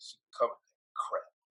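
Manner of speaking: mock mad-sounding, breathy, angry whisper. Repeating another speaker's line back, imitating someone sounding mad. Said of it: "But it was just the way you".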